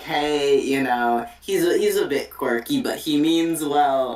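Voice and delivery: ordinary talk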